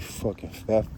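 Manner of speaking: muttered under the breath, trailing off.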